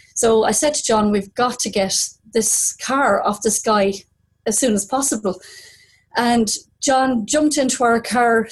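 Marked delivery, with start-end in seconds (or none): none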